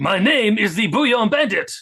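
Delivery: put-on high, loud, French-sounding villain accent. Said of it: "That sounded French".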